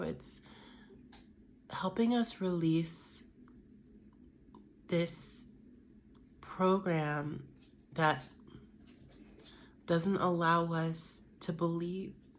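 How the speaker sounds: getting emotional. Speaking to listeners, getting emotional. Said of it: "I'm getting emotional".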